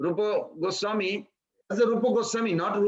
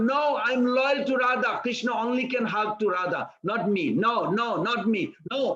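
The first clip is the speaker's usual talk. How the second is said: mock weepy, slow, tearful crying voice. Telling a Krishna story, the speaker voices a praying woman, imitating someone crying. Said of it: "And she's like crying".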